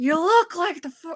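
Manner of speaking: put-on breathy celebrity voice. Doing a celebrity impression on request: Jennifer Coolidge impression. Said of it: "this is my Jennifer Coolidge".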